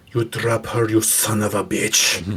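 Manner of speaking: put-on full snarl in a strong Eastern European accent. Player voicing his character mid-fight, snarling. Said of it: "as much of a snarl as he goes".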